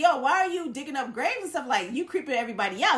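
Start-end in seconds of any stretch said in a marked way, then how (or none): none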